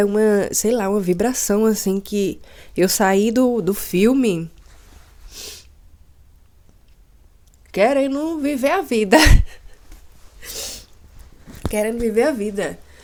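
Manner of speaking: tearful joy, overcome, crying with happiness. Just out of a film, talking about wanting to live life, crying with joy. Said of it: "Mas eu tô chorando de alegria".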